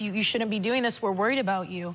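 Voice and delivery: ordinary talk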